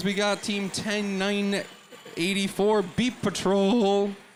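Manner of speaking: slow announcer voice, cracking and breaking. An announcer introducing the teams on the red side, voice cracking. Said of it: "Sorry about the voice crack".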